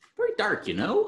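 very high, put-on North Dakota accent. Repeating another speaker's accent attempt, in a put-on North Dakota accent. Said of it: "It's a little North Dakota".

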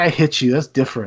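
plain

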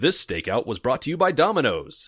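loud put-on radio ad announcer voice. Doing a mock sponsor message during a stakeout: radio announcer voice. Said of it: "And put on my radio voice".

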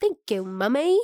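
put-on British accent like a child's. Describing how a little girl talks to her mummy, in her little british accent. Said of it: "talk in her little British accent".

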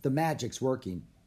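ordinary delivery, nothing marked

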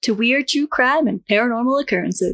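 public radio announcer voice. A show host opens the episode welcoming listeners, in an NPR voice. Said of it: "How was that for an NPR voice?".

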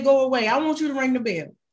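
ordinary delivery

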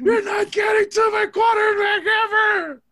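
mock shrill, sobbing child voice, very high and loud. Acting out kids blocking for their threatened dad, imitating kids crying. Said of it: "blocking and crying like".

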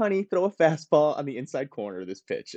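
soothing mom voice. Imagining a mom calming a pitcher through his earpiece: imitating a soothing mom. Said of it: "has a soothing effect on him".

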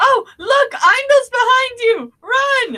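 panicked, loud shout.

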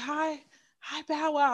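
put-on timid whisper. Retelling a timid greeting backstage: imitating a timid whisper. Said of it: "whispering it".

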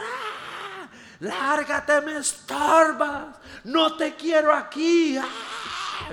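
very high, shrill, very slow, drawn-out scream. Retelling a card scene, imitating a woman who starts screaming. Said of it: "empieza a gritar".

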